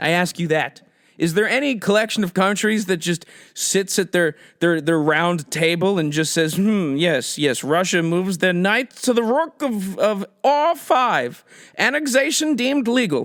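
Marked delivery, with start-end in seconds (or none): 6.5-13.3 medieval jester announcer voice. Acting out a fake council of powerful nations: medieval jester news voice. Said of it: "I always use the voice of, like, a jester from the Middle Ages".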